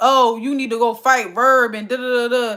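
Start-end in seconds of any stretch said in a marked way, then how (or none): 0.0-1.7 mock tough talk, lower pitch. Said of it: "then you acting tough on camera".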